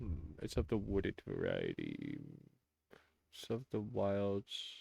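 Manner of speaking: mumbling under breath. A player's character studies a creature, mumbling to himself. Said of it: "my character's gonna mumble to himself".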